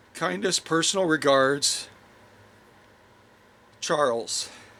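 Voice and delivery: plain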